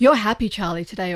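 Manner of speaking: ordinary talk, nothing marked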